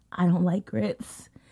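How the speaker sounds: hushed, quiet whisper. Retelling what was said to a waiter: retelling a whisper. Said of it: "I kind of whispered".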